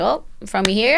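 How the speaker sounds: ordinary talk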